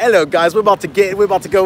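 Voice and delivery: polished, put-on British accent. Imitating a YouTuber from the UK: imitating a UK accent. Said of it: "That guy has the most perfect accent. He's from the U K".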